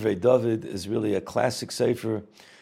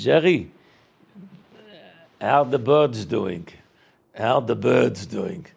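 put-on Lithuanian Yiddish accent; 4 dB louder than usual. Retelling an anecdote, the speaker quotes the rebbe speaking to Jerry, Reb David's Litvish accent. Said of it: "He said it in that Litvish accent".

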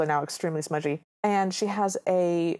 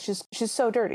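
plain

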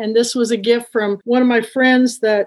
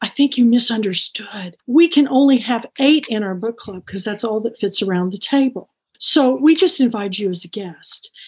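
mock-whispered, imitated whisper. Retelling what the hostess said after pulling the speaker aside, retelling a whisper. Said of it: "And she's whispering".

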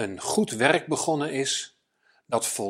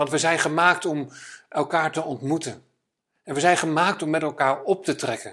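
ordinary delivery

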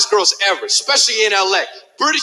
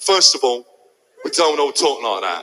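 put-on British man's accent, put on; 9 semitones lower than usual. Retelling a British man confronting the speaker after a show: imitating a British man's voice. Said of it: "that's exactly how I just sounded".

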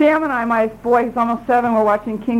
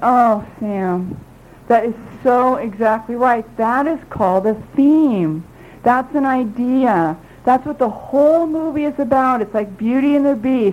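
ordinary talk

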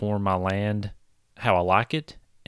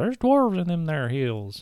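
put-on high, swooping old prospector voice; 7 semitones higher than usual. Placing dwarves in the mountains while building a world: old prospector voice. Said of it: "sound like an old prospector".

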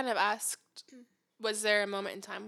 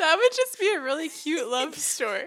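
full-on tearful crying speech, high and very loud; 8 semitones higher, 9 dB louder than usual. Moved as someone shares their love story, crying while talking. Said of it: "You're full on crying".

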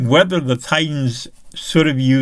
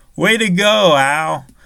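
mock-sarcastic, higher; 4 semitones higher than usual. Recounting a football game moment, quoting one man's remark to another; retelling a sarcastic 'way to go'. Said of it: "Esiason gave this really sarcastic".

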